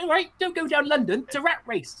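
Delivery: put-on shrill, squeaky, very high-pitched West Country Gloucester accent. Imitating a large bearded Victorian sportsman, in a high squeaky Gloucester voice. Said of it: "had a high squeaky Gloucester voice".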